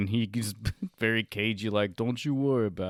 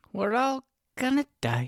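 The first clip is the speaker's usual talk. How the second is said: very high, wildly swooping cartoon rat voice. Recapping a cartoon plot, the speaker is asked to do the Rattrap voice. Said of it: "Rat Trap voice. [name], do it".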